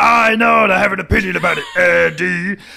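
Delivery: high, loud, rough bubbled voice. Speaker repeats a line she did a couple of episodes ago, in Vicky's bubbled voice. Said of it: "this bubbled voice Vicky".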